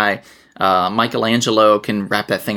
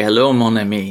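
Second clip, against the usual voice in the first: put-on flirty Cajun accent. Recalling how he used to hit on women, imitating Gambit's flirting. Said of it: "it was very Gambit-esque".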